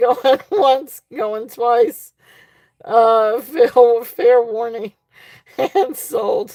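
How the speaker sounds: laughing and giggling through the words. Calling going once, going twice on a bid, laughing while talking. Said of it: "I'm sorry I got tickled on that".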